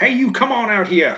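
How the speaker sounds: very high-pitched yell. Calling out in character to someone hidden in a room: yelling out. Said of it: "I'm gonna yell out".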